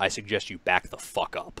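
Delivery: acted furious voice. Retelling confronting a man who screamed at his mom, retelling a furious threat. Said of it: "I'm furious at this point".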